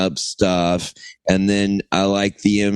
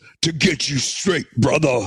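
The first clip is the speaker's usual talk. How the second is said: very gruff voice with raised pitch; 7 semitones higher than usual. Pitching a commercial where a gorilla hands over a bottle, gruff Hulk Hogan gorilla voice. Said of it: "in a very gruff voice goes".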